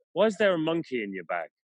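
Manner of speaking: dry, straight-faced, matter-of-fact delivery. Demonstrating a class activity, the teacher asks a student about a monkey in their bag, deadpan.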